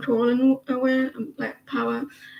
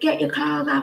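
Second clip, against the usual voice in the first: put-on angry half-shouted yell, mild; 3 semitones higher than usual. Retelling how a father yelled at his sixteen-year-old son, imitating screaming. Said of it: "and screaming".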